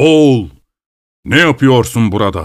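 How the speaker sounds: calling out in a full voice. Narrating a tale: a horseman calls to a man about to jump, booming voice. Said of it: "gür bir ses duymuş".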